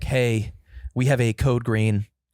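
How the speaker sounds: mock jittery, shaking intercom announcement voice, nervous and slow. Speaker retells what a voice announced over the intercom: imitating a nervous intercom voice. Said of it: "a nervous voice came over the intercom".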